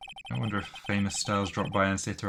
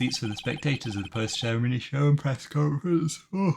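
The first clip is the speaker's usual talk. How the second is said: yawned words, pitched up; 5 semitones higher, 3 dB louder than usual. Describing empty press seats at a conference venue, yawning. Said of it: "I'm yawning".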